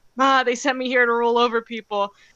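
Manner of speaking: acted pained heroic voice. Retelling a favourite movie scene: imitating Superman's pained voice. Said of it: "you could hear the pain in his voice".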